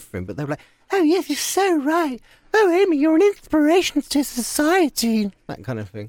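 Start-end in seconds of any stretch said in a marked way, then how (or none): 0.9-5.3 very high flirtatious gushing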